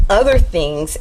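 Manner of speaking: ordinary talk, nothing marked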